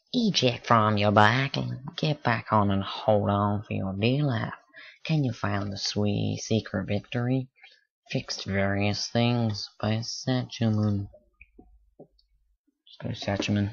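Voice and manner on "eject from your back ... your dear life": put-on, rodeo-style Texas accent. Reading a game's text aloud, the player does a Texas sort of voice. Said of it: "let's do like a texas sort of voice".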